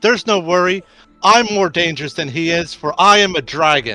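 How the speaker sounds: shouting. Playing a character who shouts at the guards, shouting. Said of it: "Cobalt just shouts".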